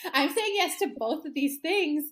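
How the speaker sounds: emotional, pitch rising. Speaking as a character at her turning point, getting emotional. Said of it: "I'm getting emotional".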